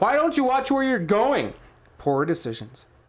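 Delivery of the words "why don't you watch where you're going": full-throated, high, shrill yelling. Reading a story aloud, voicing a character who yells: yelling. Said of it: "starts to yell".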